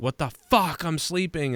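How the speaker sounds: loud shouted, yelled outburst. Retelling how the wife yelled when woken: imitating Leah yelling. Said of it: "Leah yelled at me, like".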